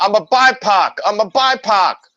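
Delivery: re-enacted yelling. Retelling how she yelled at the man taking her information: retelling a yell. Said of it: "And I'm yelling".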